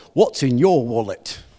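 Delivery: very deep, low commercial pitchman voice. Giving examples of brand sayings, unable to do this one without the Capital One commercial guy's voice. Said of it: "I can't even do it without using the guy's voice".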